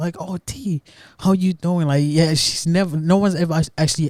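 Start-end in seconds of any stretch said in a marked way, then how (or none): 0.2-1.9 gentle, caring voice, a touch higher. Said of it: "has ever asked me".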